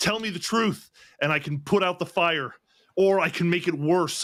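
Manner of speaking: shouting. Character confronting a man whose shoulders are on fire, yelling at him. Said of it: "kind of yelling at him".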